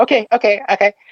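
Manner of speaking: high-pitched younger-sounding voice. Retelling their reply to a warning about an air rifle, in a high-pitched voice. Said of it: "With my high pitched voice at the time".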